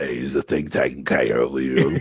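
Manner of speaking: British way of talking, dropped low. Retelling what Robin asked about the arranged cake: Robin voice. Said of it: "That's my Robin voice".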